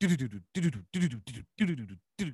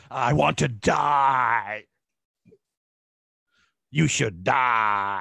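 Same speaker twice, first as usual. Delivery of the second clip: very loud guttural death-metal roar; 8 dB louder than usual. Trying out a death metal line after being told: very guttural metal voice. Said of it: "You just have to do it very gutturally".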